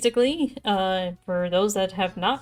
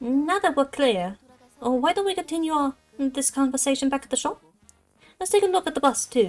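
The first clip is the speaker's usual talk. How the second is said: put-on English accent, a bit inconsistent, pitched up; 5 semitones higher than usual. Voicing characters in game dialogue: put-on English accent. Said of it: "These guys are supposed to have English accents".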